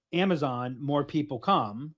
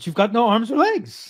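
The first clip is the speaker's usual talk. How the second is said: really bad put-on English accent, raised and high; 7 semitones higher, 6 dB louder than usual. Speaker compares self to the Monty Python knight: bad Monty Python English accent. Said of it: "that's my English accent. I know it's really bad".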